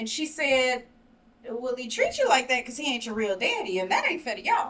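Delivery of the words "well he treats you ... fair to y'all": put-on offhand, calm, casual, sing-song matter-of-fact delivery. Retelling what she said the week after Christmas: imitating someone saying it calmly. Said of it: "she said that so calmly, so casually".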